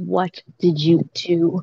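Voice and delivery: whispering quietly. A character pulls Cyrus aside so the little girl won't overhear: hushed whisper. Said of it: "like a kind of like hushed like whisper".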